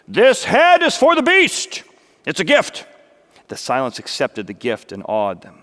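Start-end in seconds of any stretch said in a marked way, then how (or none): 0.2-2.9 very high, loud, ringing voice. Narrator reads Jack speaking over the pig's head to the others, loud. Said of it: "Jack spoke loudly".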